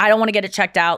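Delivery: plain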